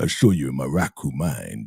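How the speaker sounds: deepest possible voice, very low and slow. Retelling someone's claim, in a very, very low voice. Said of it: "the lowest voice. This is very, very low".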